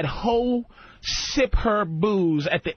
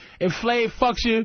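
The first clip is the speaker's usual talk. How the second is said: usual speaking voice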